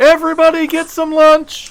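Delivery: shrill, booming, very high, very loud shout. Voicing the elf calling everyone on the ship to lunch: shouting to the crew. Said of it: "And she shouts out".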